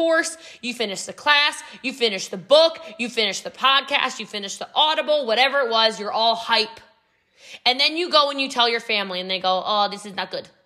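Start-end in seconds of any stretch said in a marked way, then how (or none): 9.7-10.4 bad fake put-on Spanish accent. Acting out family reacting to your hyped-up news, in a bad Spanish accent. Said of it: "that was a really bad spanish accent".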